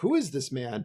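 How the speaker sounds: ordinary talk, nothing marked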